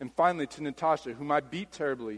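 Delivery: plain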